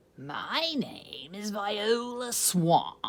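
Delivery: scratchy, rasping voice. Narrator reads the lady at the door introducing herself, scratchy Viola Swamp voice. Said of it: "said the lady in a scratchy voice".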